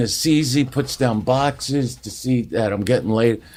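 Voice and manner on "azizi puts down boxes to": usual speaking voice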